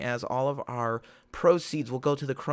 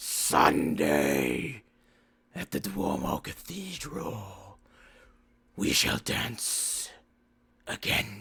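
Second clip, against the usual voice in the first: deep, reverberating, echoing bat creature voice; 6 semitones lower than usual. The narrator voices a bat creature speaking throughout the manor in an echoing creature voice. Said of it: "just kind of echoing throughout the manor, and it speaks".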